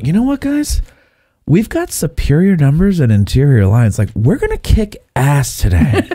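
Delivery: put-on California valley girl accent with swooping pitch. Acting out a general addressing his troops, in a California Valley Girl voice. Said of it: "Why does he sound like he's from a California Valley Girl?".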